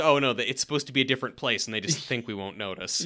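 plain

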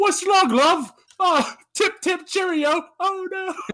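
very high, put-on Cockney voice. Speaker imagines a man talking while being arrested, mock Cockney Mary Poppins sweep. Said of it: "speaking Cockney as they arrested him".

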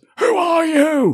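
shrill, scared, very loud, high-pitched scream. Recounting a scene where a woman's chairs move, retelling her shout. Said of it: "She immediately shouts".

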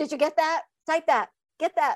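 high-pitched hollering yell. Retelling how others called out for the typing: imitating someone yelling. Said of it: "And they'd yell at me and say".

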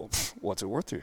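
cheeky, breathy, quick, hushed smart-aleck delivery. Retelling his answer to a driver who wanted his pictures: retelling a smart-aleck reply. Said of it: "being the smart aleck that I am".

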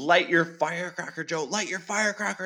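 mock frantic, high urgent yelling, repeated. Retelling how Gabe yelled at him during the fireworks, retelling someone's yell. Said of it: "Gabe starts yelling at me".

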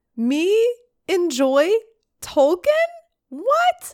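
squeaky, high-pitched put-on character voice. A network show host questions himself, in a too-high voice. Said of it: "my voice is too high".

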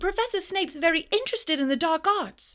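very high, sudden blurted outburst. Harry, watching Professor Lupin drink his potion, blurts out to him. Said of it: "he blurted out".

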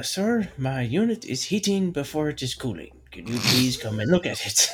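put-on Indian accent. Telling a joke, speaking the punchline character's line in a put-on Indian accent. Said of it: "I love your accent".

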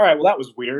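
ordinary talk, nothing marked

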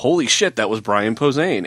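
ordinary talk

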